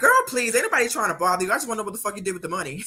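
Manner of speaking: dismissive, unbothered, tossed off like nothing. Retelling a live video, dismissive Candace Owens voice. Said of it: "Candace Owens went live and was like".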